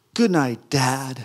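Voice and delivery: mock-enthusiastic, affectionate delivery with gusto. Recalling his daughter coming into his room at night, retelling with gusto and love. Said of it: "she said it with a lot of gusto and a lot of love".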